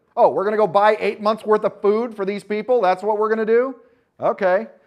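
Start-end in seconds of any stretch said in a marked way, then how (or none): 0.2-3.8 loud, high, scoffing, incredulous sarcastic voice. Acting out the disciples answering Jesus: imitating the disciples' sarcasm. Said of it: "It is absolutely sarcasm in the Bible".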